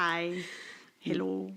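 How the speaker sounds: put-on Scottish accent. Repeating the Scottish greeting after offering to do it again, Scottish accent. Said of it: "Want to hear it again?".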